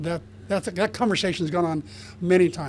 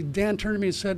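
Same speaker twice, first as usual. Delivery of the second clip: ordinary talk, nothing marked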